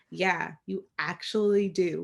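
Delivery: acted, slow, begrudging, shade-throwing tone. Retelling Paige's grudging reply to Terry's look: imitating Paige's upset shady reply. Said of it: "obviously upset that she looks better than her".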